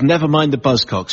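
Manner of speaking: ordinary talk, nothing marked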